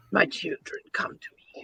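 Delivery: soft, creaky, creepy whisper.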